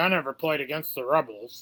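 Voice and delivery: put-on scratchy, crackly old voice. Imitating their dad's old remark about a rival team: imitating dad's scratchy old voice. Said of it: "in his scrackly old voice".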